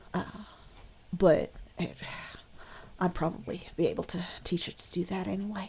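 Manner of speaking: loud, not-quiet whisper. Voicing a boy bragging to his friends: loud whisper. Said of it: "not particularly quietly, whispering".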